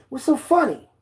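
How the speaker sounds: mock, very high, hostile guard voice. Retelling a guard's question about laughing: imitating a guard's racist tone. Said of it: "In, like, a racist way".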